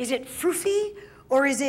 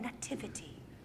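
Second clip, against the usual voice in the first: very soft, barely audible, whispered word; 4 semitones lower, 17 dB quieter than usual. Showing the class how to whisper a word: whispering. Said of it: "Whisper the word again".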